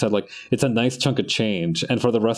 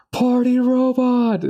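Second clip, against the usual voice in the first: mock, very high call-out shouted from crowd; 4 dB louder than usual. Recalling a past event, speaker acts out what someone yelled, retelling someone's yell. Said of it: "somebody yells out".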